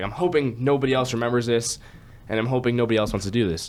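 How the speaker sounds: plain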